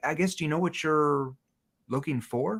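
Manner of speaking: curious, genuinely interested, inquiring tone. Demonstrating a question that draws people in, curious questioning tone. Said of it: "it's a curious tone".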